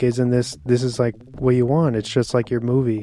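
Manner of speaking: ordinary talk, nothing marked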